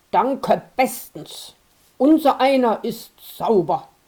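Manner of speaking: snobbish, disdainful, contemptuous, haughty tone. Narrator reading the stubborn anvil's retort to the old iron, contemptuous anvil retort. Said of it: "Der Amboss war ein Dickkopf. / Der Amboss drehte seinen dicken Kopf mit der spitzen Schnauze langsam nach allen Seiten und sah sich das alte Eisen an, / Der Amboss rümpfte verächtlich die große Schnau".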